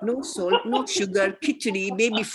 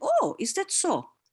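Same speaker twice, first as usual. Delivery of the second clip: put-on playful, knowing tease, slow and high; 9 semitones higher than usual. Retelling her playful reply to a puzzled friend: imitating her own teasing reply. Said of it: "looked at her with a grin... I'm a bit of a teaser".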